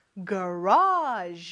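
garage stressed with exaggerated, low pitch accent.

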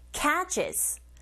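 cat in catches stressed hard. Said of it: "이 부분에 강세 꽝 주시고".

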